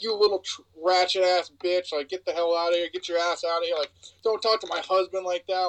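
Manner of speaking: ordinary delivery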